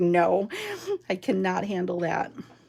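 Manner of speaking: usual speaking voice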